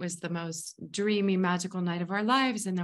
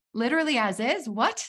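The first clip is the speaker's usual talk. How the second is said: stunned, incredulous disbelief, raised and pitched up; 5 semitones higher, 5 dB louder than usual. Retelling the group's reply at the meeting: imitating their own surprised reaction. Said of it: "And we were like".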